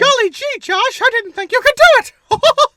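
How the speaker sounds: squeaked high and loud. Asked for good cartoon voices, the speaker does a Mickey Mouse voice. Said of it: "I could do Mickey Mouse".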